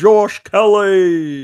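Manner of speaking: very high, loud put-on British accent. Saying a fighter's name while trying out a put-on British accent. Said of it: "Trying to do my British voice".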